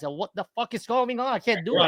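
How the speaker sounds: put-on panicked, frantic voice. Retelling a mishap on Grace's stream: acting out past panic. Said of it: "and I'm I'm panicking".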